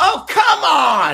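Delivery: put-on toddler voice, very high, very loud, furious outburst. Father recalling his three-year-old daughter in the car, imitating Mila's mock road rage. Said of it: "My wife has road rage, and Mila mimics her".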